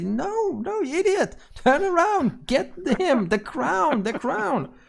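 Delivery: tiny, squeaky creature voice, very high pitch. Storyteller voicing an unseen creature yelling at another creature, squeaky creature voice. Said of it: "the squeaky voice say".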